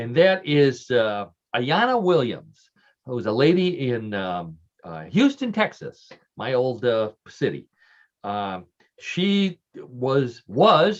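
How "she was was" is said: heavy stress on the word "was". Telling a favorite story about a record holder: emphasis on was. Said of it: "and I put the emphasis on was".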